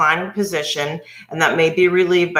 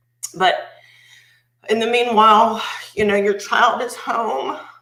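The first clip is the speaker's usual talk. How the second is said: emotional, struggling for composure, close to breaking down; 4 semitones higher than usual. Talking about her child's suffering at home, the speaker gets emotional. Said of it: "I'm very emotional".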